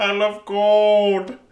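exaggerated, very high Dutch accent, gold drawn out. Asked how Goldmember from Austin Powers sounds, a speaker does a Goldmember impression. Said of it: "How's his voice?".

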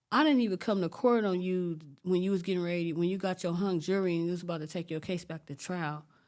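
plain

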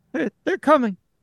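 high-pitched, delirious mumbling.

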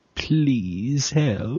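soft, seductive, sultry little plea. Responding to a request to make it sexier, sexy Leeloo voice.

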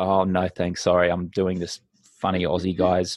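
low, dark, depressed, gloomy and sheepish voice. Declining a drink at a party, dark, depressed, embarrassed. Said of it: "in a very kind of dark, depressing, embarrassed kind of way".

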